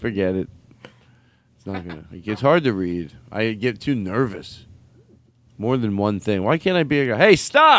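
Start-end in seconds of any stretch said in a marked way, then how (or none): 7.2-7.8 loud, shrill, very high-pitched shouting. Imitating the guy who yells the commands on a show. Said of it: "the guy who yells all the commands".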